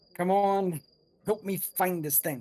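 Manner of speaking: barely whispering, soft. Player character speaking to an object around their neck, slight whisper. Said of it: "As I slightly whisper to it".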